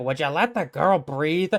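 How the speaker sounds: put-on fast, very cranky, crotchety old-timer voice. Narrating a scene, voicing an old Tanuki who speaks up: crotchety old voice. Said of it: "you hear a very crotchety old voice go like".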